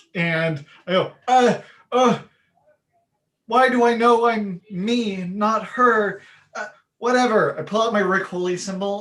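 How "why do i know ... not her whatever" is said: baffled, halting, bewildered voice, raised and high. Playing a character who wakes up confused in another body: confused Beth. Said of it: "a very confused Beth is standing in her place".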